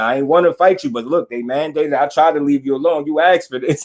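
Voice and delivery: ordinary talk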